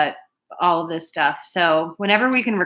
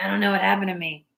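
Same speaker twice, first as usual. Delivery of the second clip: fast bug-creature voice; 3 dB quieter than usual. Imagining JPC going too far during a crime, JPC impression, bug-people voice. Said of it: "sounds a lot like the bug people".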